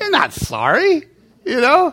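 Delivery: slow, high-pitched scolding tone.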